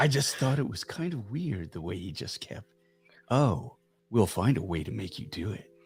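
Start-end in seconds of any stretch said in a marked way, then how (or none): 4.1-5.6 put-on male bedroom voice, lower and quieter. Speaker mimicking a man who kept insisting she'd do something: imitating his bedroom voice. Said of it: "with his bedroom voice".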